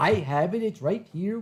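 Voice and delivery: English with a put-on Norwegian accent. Retelling what someone said on the phone: imitating a norwegian accent. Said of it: "with my Norwegian accent".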